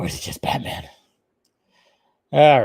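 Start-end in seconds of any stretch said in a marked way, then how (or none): 0.0-0.9 casual, breathy, hushed whisper. Retelling a woman's quip, a speaker repeats it in a casual Batman voice. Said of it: "switched into a casual Batman voice".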